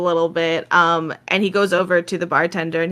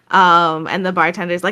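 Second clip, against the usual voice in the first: usual speaking voice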